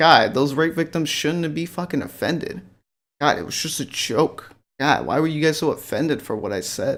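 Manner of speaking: ordinary talk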